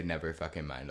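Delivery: ordinary delivery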